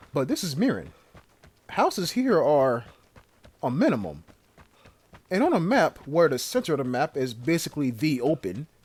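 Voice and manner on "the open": "the" strongly stressed, hit hard. Describing a map whose center is basically the open: strong stress on the. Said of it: "when I say the, I put emphasis on T H E".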